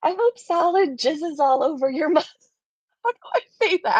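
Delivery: words broken up by laughter throughout. Reading a comment aloud, trying to finish the line: laughing while talking. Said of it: "I can't say it without laughing".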